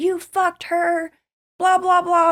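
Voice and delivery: mock raging, out-of-control, loud, high scream. Telling how he burst in and found the neighbor on the couch, the speaker repeats his words: retelling a scream. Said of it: "And he screams at him".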